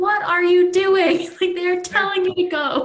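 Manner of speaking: loud, high, irritated, exasperated yelling in disbelief. Describing watching a show, the speaker recalls their past self: retelling yelling at the tv. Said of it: "And I was yelling at my TV screen".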